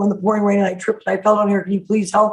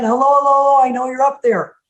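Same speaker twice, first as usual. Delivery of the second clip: put-on mild yell, half-shouted, calling upward; 4 semitones higher than usual. Telling a story of a man stuck in a hole calling up: acting out a scream. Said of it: "Paul screams again".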